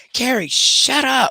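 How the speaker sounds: mock screaming, shrill and very high. Retelling how her mom screams at her, imitating mom screaming. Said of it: "she be screaming at me".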